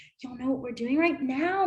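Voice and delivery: fast, all excited and happy. Acting out telling kids where they are going: acting out excited and happy. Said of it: "I'd be all excited and happy".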